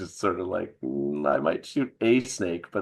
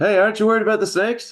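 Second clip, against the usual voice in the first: very loud, very high yell; 8 dB louder than usual. Calling out to an old man about snakes in the basement: yelling at the old man. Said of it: "I'm gonna kinda yell at the old man".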